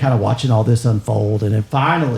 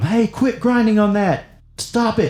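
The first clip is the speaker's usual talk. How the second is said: very high, slow, drawn-out, high-pitched shout; 12 semitones higher than usual. Voicing a guy telling skateboarding kids to stop grinding: yelling. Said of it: "some guy's yelling at 'em".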